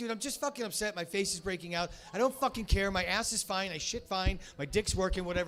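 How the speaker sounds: ordinary delivery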